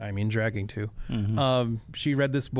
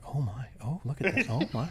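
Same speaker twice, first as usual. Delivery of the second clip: hushed woman's half-whisper, under the breath; 4 dB quieter than usual. Retelling how the mom in the movie theater half-whispered: imitating a half-whispering mom. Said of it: "the mom next to me is whispering to her daughter".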